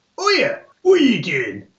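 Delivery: very high, sing-song, swooping sailor character voice. Voicing a sailor who turns around to a fallen character: voicing a sailor. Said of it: "one of the sailors turns around and goes".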